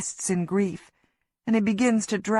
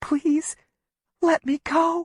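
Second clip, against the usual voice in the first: whispered, higher pitched; 8 semitones higher than usual. Reading a scene where the narrator, pinned to a tree, pleads: whispering. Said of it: "I whisper".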